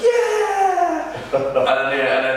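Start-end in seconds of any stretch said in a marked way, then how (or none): 0.0-1.1 cheering voices. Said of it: "the crowd went".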